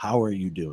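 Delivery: sincere, grave, serious and earnest. Showing how to sit eye to eye and check on someone, serious tone. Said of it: "ask in a serious tone".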